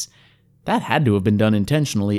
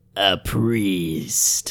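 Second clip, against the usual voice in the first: contemptuous, sneering, scornful jeer. The hobgoblin answers a traveler preaching the good news, sneering. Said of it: "sneered the hobgoblin".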